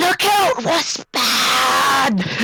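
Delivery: strained shout. A game player shouts a warning despite a bad throat, in a hoarse shout. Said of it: "which I've got a bad throat as well".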